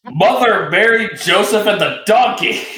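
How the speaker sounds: mock, high, long, stretched, drawn-out screamed exclamation. Saying the line a character says when she gets up: Jet's scream. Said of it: "can I just say the line that Jet says when she gets up?".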